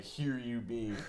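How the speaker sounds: acted, hushed, very quiet, barely functioning wasted voice. Retelling a friend's catchphrase, imitating Nick barely able to move. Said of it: "so fucked up he could barely move and be like".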